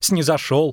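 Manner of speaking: ordinary delivery, nothing marked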